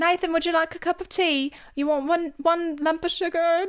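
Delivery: horrendous fake British accent, high-pitched. Trying to copy a british accent out loud, horrendous attempt at a british accent. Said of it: "this is horrendous".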